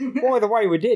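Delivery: put-on Australian accent. Speaker repeating a hypothetical episode line, put-on australian accent. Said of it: "I've turned Australian to say".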